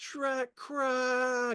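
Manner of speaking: very high screaming yell, gargling and choking. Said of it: "he's screaming with blood dripping".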